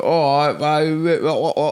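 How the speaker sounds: bad fake British accent, very drawn-out and clumsy. Showing how someone asked to do a british accent would sound; bad british accent. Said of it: "if you say do a British accent, you'd be like".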